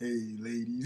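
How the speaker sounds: very quiet, deep, hushed put-on voice. Teasing the other host about their intro, imitating his deep sway voice. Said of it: "you still come through with the fucking deep sway".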